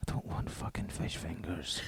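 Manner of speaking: slow, hushed whisper close into the ear. Retelling leaning in to the other speaker's ear at lunch: imitating a whisper. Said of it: "I just whispered in your ear".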